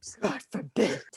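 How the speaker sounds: put-on rough, scratchy, hoarse rasp. Talking about people gossiping in Facebook groups, the speaker adds an aside in a put-on raspy voice. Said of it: "(Raspy voice)".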